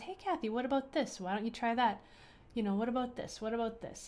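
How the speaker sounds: gentle, kind, encouraging voice. Speaker acts out her true inner voice offering her options, imitating a soft, kind inner voice. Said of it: "that soft, subtle voice that is always going to be kind".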